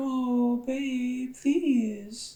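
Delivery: put-on very high, wheedling, pouty baby voice. Showing how a girl talks to get her way; baby voice. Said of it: "a girl talking in a baby voice".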